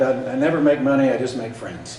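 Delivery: ordinary delivery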